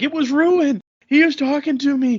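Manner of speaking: very high, shrill, frantic, freaked-out shouting. Retelling a scene where Alono wakes everyone: imitating someone yelling. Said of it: "Alono's yelling and waking everybody up".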